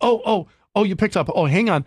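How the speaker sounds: high, casual robocall voice.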